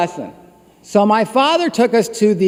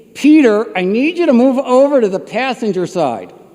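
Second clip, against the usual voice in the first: usual speaking voice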